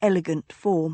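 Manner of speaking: plain reading voice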